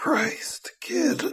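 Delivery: groaned, very high and ruined voice. Aegis reacts to Kidwin, groaning under his breath. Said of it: "Aegis groaned under his breath with his ruined voice".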